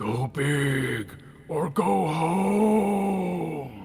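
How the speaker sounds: high, eerie ghostly voice, home stretched out. Game narrator voicing a ghost speaking to a racer passing on lap eight: ghostly voice. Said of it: "a ghostly voice that says".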